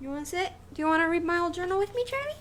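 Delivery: put-on very high, fast, cooing baby talk.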